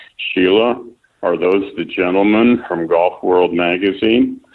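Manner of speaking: ordinary talk, nothing marked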